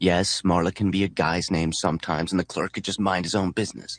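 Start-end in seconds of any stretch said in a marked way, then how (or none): none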